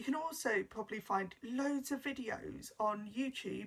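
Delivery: ordinary delivery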